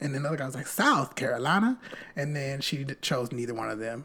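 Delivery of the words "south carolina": half-hearted put-on Southern Louisiana accent, higher. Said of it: "You gave them a partial New Orleans accent".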